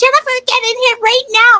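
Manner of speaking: mock, very high-pitched, shrill yell. Retelling how mom called from the building: imitating mom yelling. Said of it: "and she yells".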